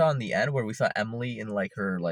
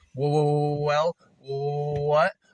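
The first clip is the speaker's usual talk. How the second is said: halting stammer, pitched up, what stretched out; 5 semitones higher than usual. Complaining that a character's stutter is overused, imitating her stutter. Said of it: "I had one problem with just her stutter".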